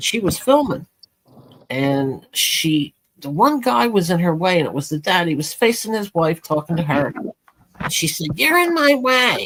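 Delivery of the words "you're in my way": put-on snooty voice, high, slow, arrogant, nasty. Retelling what a filming mother in the bleachers said to a dad, mock-arrogant and nasty. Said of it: "real arrogant, and nasty".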